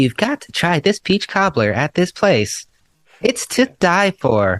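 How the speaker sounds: text-to-speech robot woman voice. Imitating a food video's narration: TikTok robot lady voice. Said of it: "lady's robot voice".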